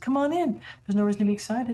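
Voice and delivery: sugary, sweet, beckoning, inviting voice. Game master voicing a voice calling from around the corner, sweet voice. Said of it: "you do hear this sweet voice".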